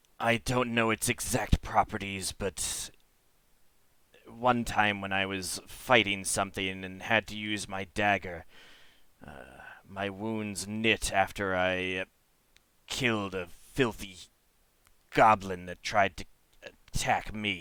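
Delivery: sibilant hissing character voice throughout. During a game, a player voices his character describing a ring, hissing. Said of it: "he hisses and says".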